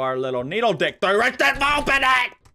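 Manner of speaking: way overexcited, swooping and rising tone. Suggesting a way to force open a locked drawer: overly excited. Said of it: "I'm a little too excited".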